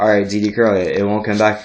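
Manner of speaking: plain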